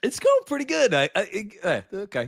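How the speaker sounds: breaking, cracking voice squeaking and jumping very high. Answering a greeting asking how he is, voice cracking. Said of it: "got a little voice crack out of the way".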